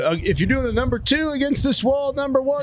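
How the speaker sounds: high-pitched mock voice calling out.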